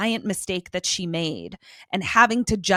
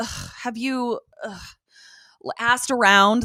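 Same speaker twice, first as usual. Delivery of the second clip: openly fed-up, exasperated put-on voice; 3 semitones higher than usual. Retelling Buffy's reply about a missing boyfriend: imitating exasperated Buffy.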